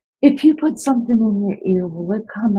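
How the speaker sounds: put-on cute, innocent little-girl voice. Retelling greeting a teacher as a child: imitating own cute innocent little-girl voice. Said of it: "in my little girl, cute, innocent way".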